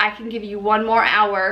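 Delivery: normal talking voice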